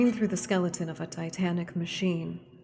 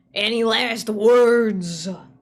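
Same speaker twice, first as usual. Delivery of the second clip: very loud buzzing, glassy rasp with stretched-out words; 4 semitones higher, 10 dB louder than usual. Narrator voicing the Clockwork King as you spiral down to the gates: Clockwork King's blowfly-and-glass voice. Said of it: "its voice like a cyclone of blowflies and broken glass".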